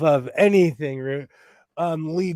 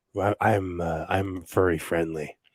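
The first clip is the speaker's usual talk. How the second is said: put-on soft, smooth, chocolatey voice, stretched out; 8 semitones lower, 5 dB quieter than usual. Speaker switching into a put-on voice for the audience, chocolatey voice. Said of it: "Let me use my chocolatey voice".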